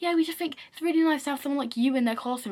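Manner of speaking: friendly, cheery, pleasant, nice-sounding tone. Retelling what the head teacher said, imitating someone saying it with a smile. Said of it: "he had to say this with a smile on his face".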